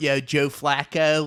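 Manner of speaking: put-on Baltimore accent, close to a Philadelphia accent. Retelling how a friend does his Baltimore bit: imitating a Baltimore accent. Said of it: "his Baltimore".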